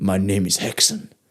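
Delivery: properly acted, earnest delivery, serious, low and slow. Showing how they act for auditions, acting properly. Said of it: "I'll do it properly".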